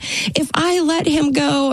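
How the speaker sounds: mock, very slow, high-pitched scream. Recounting a painful phone call with a man, retelling own screaming. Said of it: "I'm screaming in the phone at this poor man".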